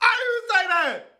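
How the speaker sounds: loud, high shout. Accused of lying about the house, the man denies it, raising his voice. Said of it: "I know you're not raising your voice".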